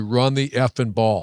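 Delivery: plain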